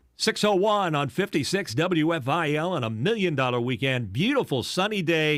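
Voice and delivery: upbeat over-the-top DJ voice. Recreating the DJ style of the genre at WFIL: upbeat, over-the-top DJ style. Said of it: "I did did sound upbeat and over the top".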